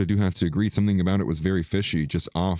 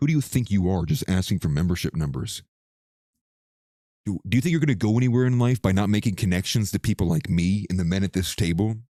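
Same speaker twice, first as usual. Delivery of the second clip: put-on in-your-face, confrontational voice. Retelling a customer who got in their face, imitating an in-your-face customer. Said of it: "gets in my face, like, with his finger pointing at me".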